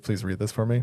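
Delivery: plain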